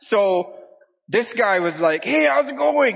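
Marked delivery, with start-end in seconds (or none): 2.0-2.9 play-acted very high, chirpy, cheerful, bubbly voice. Retelling a taxi driver's greeting: imitating a bubbly taxi driver. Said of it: "the taxi cab is really bubbly".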